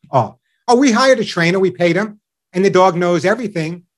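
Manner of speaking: plain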